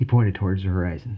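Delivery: ordinary delivery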